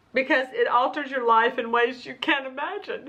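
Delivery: on the verge of tears, voice welling up. Speaker describing how a health condition altered their life, on the verge of tears. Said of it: "I'm going to cry".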